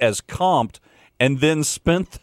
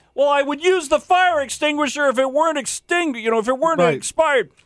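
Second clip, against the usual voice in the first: put-on yell, pitched way up, very high, shrill; 12 semitones higher than usual. Telling a story about an expired extinguisher at a radio station, retelling a yell. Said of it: "And I'm yelling".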